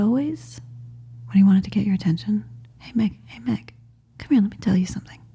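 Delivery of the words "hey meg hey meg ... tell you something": hushed, whispered voice. Retelling how a man would get someone's attention, retelling a whisper. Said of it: "And he would like whisper".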